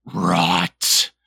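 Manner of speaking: monstrous, horrifying, rough creaky croak. Casting a spell in character: most horrifying voice. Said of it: "the most horrifying voice that you've ever heard".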